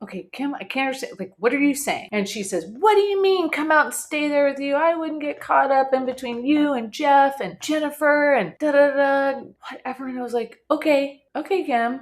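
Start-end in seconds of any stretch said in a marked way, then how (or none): 2.7-9.4 put-on frantic, screamed outburst. Retelling a birthday-morning phone call from Kim; imitating Kim screaming. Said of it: "she calls and she's screaming".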